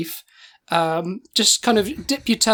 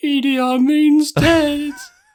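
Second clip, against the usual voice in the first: mock sobbing, tearful, high little boy's voice; 8 semitones higher, 4 dB louder than usual. Retelling what a four-year-old said in class: imitating crying child. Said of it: "sat in the class crying".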